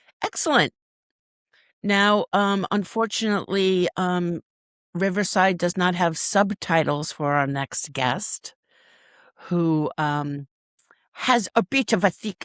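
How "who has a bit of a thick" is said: clumsy, failed attempt at a Scottish accent. Host introducing the next guest, attempting a bad scottish accent. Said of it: "that was not a Scottish accent".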